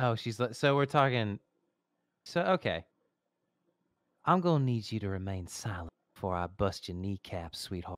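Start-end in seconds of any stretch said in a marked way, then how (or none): 4.2-8.0 low, sweet, sugary Southern drawl. Voicing Lola practicing an undercover case, in Lola's sweet Southern accent. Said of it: "you want to take this sweet Southern accent?".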